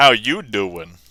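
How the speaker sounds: cheesy beer-commercial announcer voice. Greeting a viewer in chat, like a beer commercial. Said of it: "I didn't mean to be like a beer commercial".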